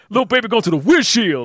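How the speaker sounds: put-on very thick country accent, very high and loud. A speaker retelling a man's words to the audience, imitating a thick country accent. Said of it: "the deepest country accent you can tell".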